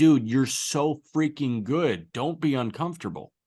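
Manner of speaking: loud, urging shout. Retelling how they react to a struggling pitcher: imitating yelling at the tv. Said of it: "I'm yelling at the T V like".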